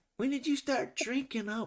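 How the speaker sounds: very high-pitched, obnoxious, ranting, jeering voice. Retelling an obnoxious fan the umps nearly kicked out, imitating a fan going off. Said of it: "she's just like going off".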